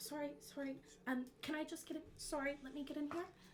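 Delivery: small, high, mouse-like voice, quick, self-effacing. Role-playing a small, mouse-like character, in a very quiet mouse-like voice. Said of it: "very quiet voice".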